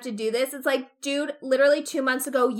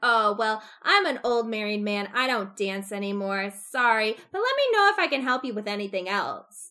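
imitated passive-aggressive politeness; 2 semitones lower, 3 dB quieter than usual. Retelling a character's reply at a ball: imitating passive-aggressive tone. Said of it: "even more passive aggressive than that".

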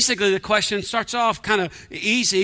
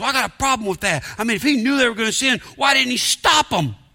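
mock fed-up, exasperated, complaining tone; 3 semitones higher than usual. Retelling a skeptic's question about god: imitating an exasperated man. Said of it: "talking like he's exasperated".

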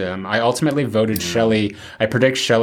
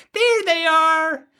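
put-on girl shrieking, very high. Quoting the girl at the rest stop in a movie: imitating a girl shrieking. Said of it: "who shrieks".

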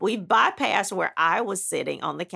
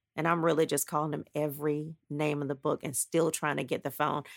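ordinary talk, nothing marked

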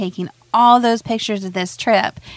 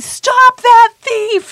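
shrill, high, full-throated bellowing shout; 7 dB louder than usual. Telling a story about a dad chasing a pickpocket, retelling a bellowed shout. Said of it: "Just bellowing".

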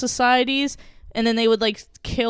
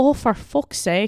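put-on Irish accent. Showing the accent they can only manage when cursing: put-on accent while cursing. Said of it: "I could only do it when I'm like cursing".

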